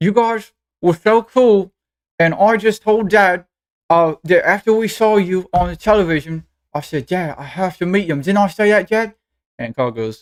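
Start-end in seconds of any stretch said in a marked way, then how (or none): 0.0-9.1 chattering through a mouthful while chewing. Voicing a girl talking to a dragon while eating jerky: talking while chewing. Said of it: "she's chewing".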